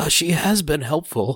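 weak, odd, high voice. Recapping a show, quoting Soong in a weird, weak voice. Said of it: "in that weird, weak tone of voice".

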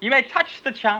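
put-on British accent, female voice. Repeating a woman's promo line to a listener who calls it British; British-sounding impression of a woman. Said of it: "That's British".

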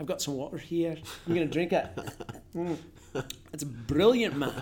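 easygoing, casual chatting in a Scottish accent. Speaker shows how the accent sounds on any everyday line, in Scottish accent. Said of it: "and you can really talk about anything".

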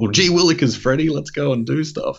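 mock, very high, excitable voice full of wonder. Mocking how a character acts in the movie: imitating excitable Shazam. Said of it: "Now he's excited".

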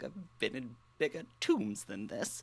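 very quiet mumble under the breath. A small character wanders underneath the stage alone, muttering to oneself. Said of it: "be muttering to myself".

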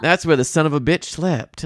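smug gloating with light, barely-there Texas drawl. Recapping a movie scene, the speaker quotes Brock gloating in a bedroom: faint Southern Texan drawl. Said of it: "gloating in that like very faint Southern Texan drawl".

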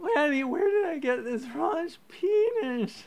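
put-on very high slurred drunken sobbing, penis drawn out. Podcast host retelling crying at the co-host, mock drunken slurred crying. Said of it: "I'm slurring my words and I keep crying like".

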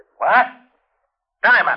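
sudden exclaimed call-out in a high pitch. Hearing that the Jerome guy wants Diamond again, yelling. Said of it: "You better watch that yelling".

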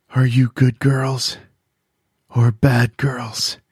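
whispering, muffled as if through a mask. A man wearing a mask speaks to the girls in the car, whispery and mask-muffled. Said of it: "he said in a whispery voice, muted by the mask".

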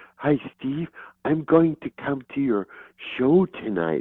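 very breathy, airy, high-pitched voice. Recalling what Monica said one night before his show, breathy Monica impression. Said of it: "she spoke very breathy".

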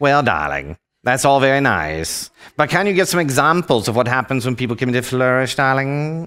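hammy, over-the-top, exaggerated put-on cartoon character voice. Voicing what the audience is thinking in their heads: Edna Mode voice. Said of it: "in your Edna Mode voice".

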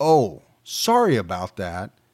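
put-on insincere sarcasm, low and swooping. Describing a recording where Byron responds after the rifle jams: acting out a sarcastic apology. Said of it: "in a real kind of shitty sarcastic tone".

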